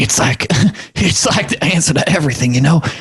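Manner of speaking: close, confiding whispered voice. Putting an arm around the listener, whispering in their ear. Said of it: "like whispering in your ear".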